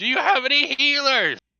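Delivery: high, loud scream.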